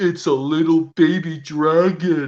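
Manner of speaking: slow, drawn-out cartoon dragon character voice. Doing voice impressions from a favorite cartoon episode for a guessing game: Dragon Tales voice impression. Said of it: "guess all these voice impressions".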